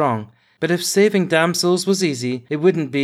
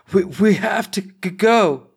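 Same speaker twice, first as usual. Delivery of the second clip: breathless, choked words, spoken very slowly; 4 semitones higher than usual. Narrator reads the first-person hero telling a companion they must go, choking out the words. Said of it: "managed to choke out".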